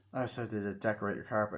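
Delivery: normal talking voice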